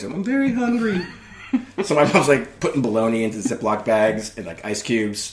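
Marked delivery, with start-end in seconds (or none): 0.0-1.0 tiny, little, very high-pitched voice. Retelling a story, the speaker quotes a man in his room in a little quiet voice. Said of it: "he starts this little quiet voice".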